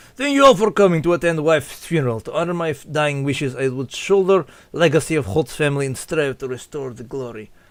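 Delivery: English with a put-on Russian accent. Voicing a character who thanks guests at his wife's funeral, in a russian accent. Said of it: "I'm just giving him a Russian accent".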